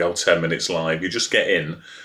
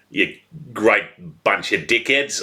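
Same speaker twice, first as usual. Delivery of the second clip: broad Australian accent on the word "dickheads"; 3 semitones higher than usual. Showing the best accent for saying dickheads, Australian accent. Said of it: "the best accent to say dickheads in".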